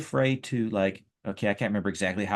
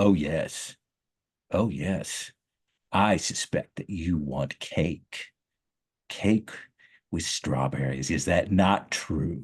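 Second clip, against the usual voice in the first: menacing, sinister villain voice; 3 semitones lower than usual. Demonstrating a character who sounds villainous but is actually nice: villain-sounding voice. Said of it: "the character who sounds like a villain whenever he talks".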